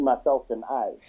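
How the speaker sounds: plain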